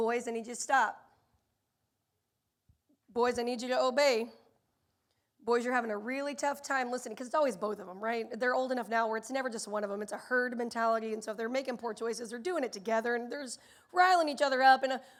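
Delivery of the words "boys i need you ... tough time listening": mock even-keeled, calm, courteous, polite voice. Retelling speaking to the boys: imitating own calm, polite tone. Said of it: "very calmly and very politely say".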